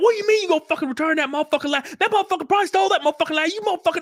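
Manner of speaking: put-on very high, rapid-fire furious scream. Retelling how she reacted while he just stood there: imitating furious screaming. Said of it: "And she is furious".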